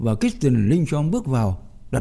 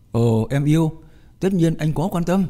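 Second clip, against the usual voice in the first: ordinary delivery, nothing marked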